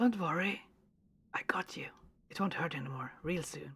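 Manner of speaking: breathy whisper. Voicing a character comforting a wounded animal: whispery voice. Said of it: "he still has a, a whispery voice".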